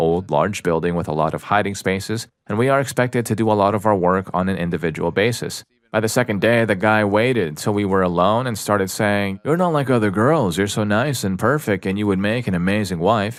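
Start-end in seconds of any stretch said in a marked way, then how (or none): 9.4-13.4 very creepy, unsettling, sweet-talking tone. Retelling what a new coworker said when alone: imitating a very creepy tone. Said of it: "in a very creepy tone".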